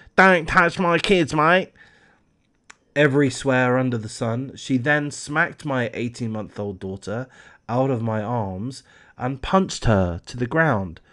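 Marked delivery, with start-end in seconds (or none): 0.2-1.7 put-on Australian bogan accent. Reading out a mother's quote about a woman who jumped the dodgem barrier, in a put-on Bogan accent. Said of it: "I'll put on a Bogan accent quickly".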